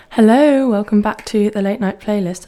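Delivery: very loud, full-on on-air radio voice. Radio host greeting listeners back on air, very loud. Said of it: "Sorry, I'm very loud in your ears".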